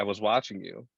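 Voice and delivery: ordinary delivery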